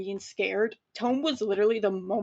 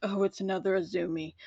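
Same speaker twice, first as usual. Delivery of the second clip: acted, utterly tired, worn-out, weary voice; 3 dB quieter than usual. Speaker retells a remark someone handed her mid-conversation, imitating a very tired voice. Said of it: "in the most tired voice".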